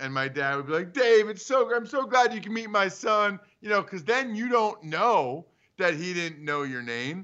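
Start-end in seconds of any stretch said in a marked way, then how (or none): 0.9-3.4 keen, eager, glad, enthusiastic tone. Retelling how a father greeted a contact from afar: imitating dad's enthusiastic greeting. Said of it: "you have great enthusiasm".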